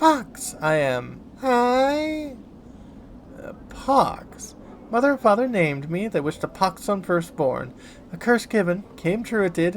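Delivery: put-on voice of a ten-year-old girl. A narrator voices a stranger answering who he is, in a high-pitched girlish voice. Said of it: "he responds with a high-pitched voice that sounds more suited to a girl of ten years".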